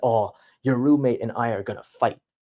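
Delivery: ordinary talk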